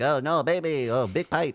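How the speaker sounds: high little creature voice, spoken slowly. Describing the little Anzellans running around talking, a little Babu Frik creature voice. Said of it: "when they're running around and like talking like that".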